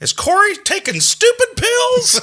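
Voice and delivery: very high yell with wild pitch swoops. Retelling what Bubbles yelled as the speaker's mom walked in: yelling in Bubbles voice. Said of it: "Bubbles in his Bubbles voice yells".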